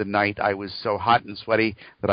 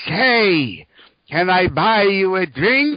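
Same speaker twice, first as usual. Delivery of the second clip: put-on very high, raised old man voice, "say" drawn out; 10 semitones higher, 7 dB louder than usual. Telling a joke, the speaker voices the old man talking to a robot: old man voice. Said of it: "the old man says".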